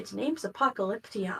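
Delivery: hushed half-whisper, close and quiet. Leaning over to tell another character a name: half-whispering in her ear. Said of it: "kind of whisper in her ear".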